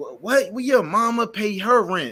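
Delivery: put-on high-pitched show-off kid voice. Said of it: "talking like".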